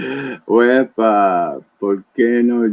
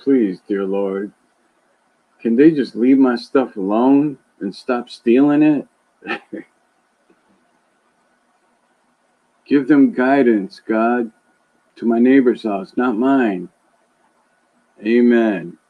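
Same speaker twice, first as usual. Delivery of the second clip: joking, tongue-in-cheek mock pleading prayer tone. After urging everyone to pray more, speaker gives a mock prayer. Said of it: "pray to God and say".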